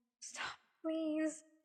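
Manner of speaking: whispered, pleading tone. The narrator, close to tears, pleads with a man to stop, whispered plea. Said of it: "I whispered".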